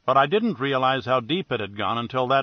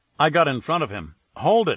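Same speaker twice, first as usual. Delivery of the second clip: usual speaking voice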